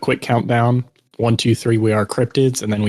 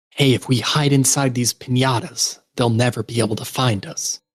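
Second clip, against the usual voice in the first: stage whisper, loud. A player character speaks to the group during a game, in a loud stage whisper. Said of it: "my podcast honed perfect stage whisper".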